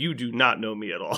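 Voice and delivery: ordinary talk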